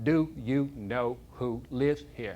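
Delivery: drawn out very slowly and deliberately. Retelling what a man asked him: speaking real slowly. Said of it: "real slowly".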